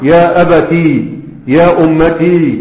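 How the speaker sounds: slow, deliberate stress, final ya of أبتي drawn out.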